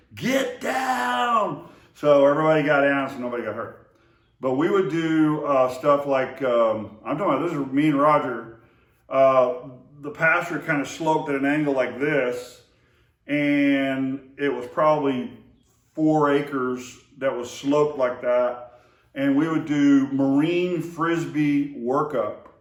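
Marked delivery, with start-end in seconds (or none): 0.2-1.7 screamed high. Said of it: "immediately I screamed".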